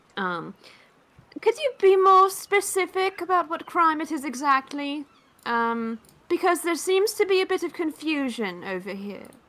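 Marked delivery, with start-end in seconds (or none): 1.4-8.6 very high, amplified-sounding booming shout. Voicing a character yelling back with magically amplified voice: magically booming yell. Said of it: "will yell back with thaumaturgy".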